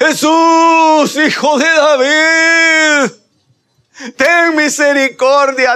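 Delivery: mock, very high-pitched, very slow, loud crying out. Retelling Bartimeo crying out to Jesus: Bartimeo shouting for mercy. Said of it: "Y gritaba, y gritaba".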